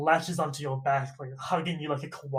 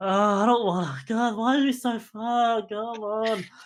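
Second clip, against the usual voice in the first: high, whiny voice; 6 semitones higher, 4 dB louder than usual. Narrating a character whose feet hurt, voicing her complaining. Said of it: "you started complaining".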